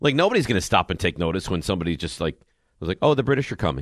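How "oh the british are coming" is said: limp, flat, unimpressive, underwhelming delivery. Mocking how the original warning was said, imitating an underwhelming delivery. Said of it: "very underwhelming".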